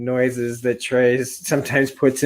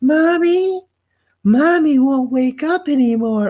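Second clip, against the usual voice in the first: super cute, very high, slow little cub voice; 14 semitones higher, 3 dB louder than usual. Describing a mountain lion's cubs crying out, doing a super cute child voice. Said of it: "that super cute child voice that you hear".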